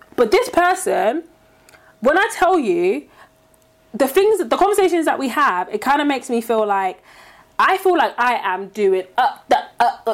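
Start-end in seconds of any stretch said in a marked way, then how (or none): 9.2-10.2 stuttering, getting stuck on uh. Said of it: "Yeah, stuttering".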